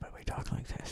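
hushed, soft, quiet delivery. Co-hosts imagine their show The Hang done in a quieter voice. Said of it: "It's quieter".

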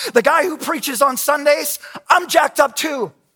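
high, loud public announcement voice.

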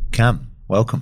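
podcast or radio host voice. Welcoming cam at the start of the podcast: podcast presenter voice. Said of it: "It's my podcast voice now".

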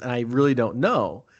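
ordinary talk, nothing marked

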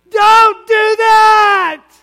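very high, very loud, stretched, shrill scream. Demonstrating how wisdom sounds when it cries out, screaming. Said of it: "Wisdom screams".

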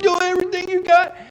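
very high screaming coach. Speaker recalls a coach yelling at athletes; imitating a screaming coach. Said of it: "screaming at you".

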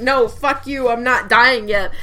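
ordinary talk

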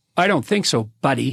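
tough, hard-sounding tone. Ending a rebuttal to another speaker's argument, acting tough. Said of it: "you're being real tough there, bro".

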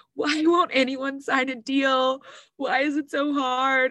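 ugly, high, tearful bawling and crying. Retelling a video journal recorded on an iPhone during a hard year, imitating herself crying. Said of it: "I was like crying into my iPhone".

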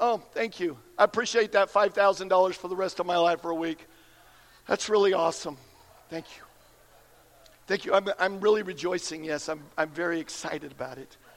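acted-out, unexcited, low, emotionless deadpan. Mocking a lottery winner who thanks the prize-givers calmly: mock unemotional thank-you. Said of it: "They don't go".

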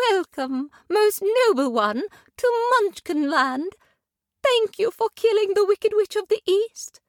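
gentle, tender, very high voice. Narrating a story, the lace-covered lady greets the arriving girl: tender. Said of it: "The lace-covered lady said tenderly".

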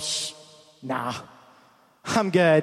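put-on sarcastic, dismissive tone, very slow and drawn out. Acting out a reply to Jesus asking about healing: acting out a sarcastic reply. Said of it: "there would be a little sarcasm".

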